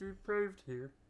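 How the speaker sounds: bad robotic frog puppet voice. Introducing the show in a bad Kermit impression. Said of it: "my Kermit impression".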